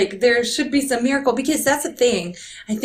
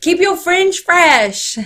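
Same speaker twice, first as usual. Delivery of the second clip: put-on Southern accent, higher and louder; 7 semitones higher, 6 dB louder than usual. Imitating Jackie J giving beauty advice, put-on Southern accent. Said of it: "I'm making her sound like a Southerner".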